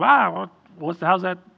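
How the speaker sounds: high, loud, flippant delivery. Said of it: "that kind of little flippant thing".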